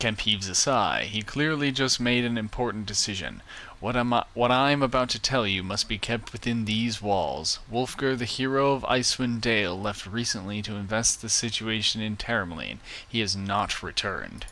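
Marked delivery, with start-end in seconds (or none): none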